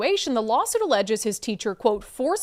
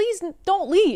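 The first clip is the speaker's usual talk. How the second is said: put-on high, begging little child's voice, pleading; 7 semitones higher than usual. Retelling how a fourth grader followed the teacher to the door: imitating a child begging. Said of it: "begging her".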